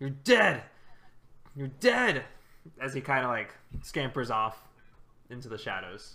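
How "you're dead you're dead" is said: screamed out in agony through tears. Narrating a wounded character fleeing into the shadows: anguished screaming. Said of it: "he just screams out".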